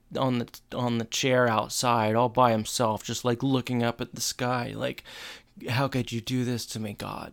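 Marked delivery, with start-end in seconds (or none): 5.6-7.3 soft, forlorn, sorrowful voice. Retelling a TV scene, acting out a character: imitating a sad Corey. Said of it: "so sad on".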